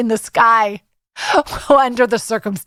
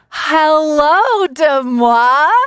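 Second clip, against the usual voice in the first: voice cracking mid-word, drawn out; 3 semitones higher than usual. Greeting an anonymous guest on the podcast, the host's voice cracks. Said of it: "my voice just cracked".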